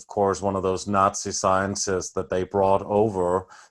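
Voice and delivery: ordinary talk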